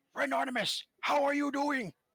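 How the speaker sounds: still booming, loud voice meant as an indoor voice. Repeating the greeting after being told off for shouting: inside voice, still loud. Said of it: "Inside voice".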